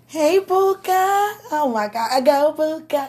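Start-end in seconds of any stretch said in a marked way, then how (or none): 0.1-1.3 tender, doting, vulnerable, affectionate high-pitched voice. Greeting Puka: affectionate high voice. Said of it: "I'm very affectionate".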